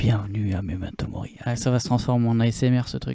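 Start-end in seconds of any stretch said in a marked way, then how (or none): 0.0-1.3 grave, deep, low put-on announcer-style voice. Showing the other speaker how to talk as their Doctor Love, in a deep low voice. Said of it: "tu vas parler avec une voix grave".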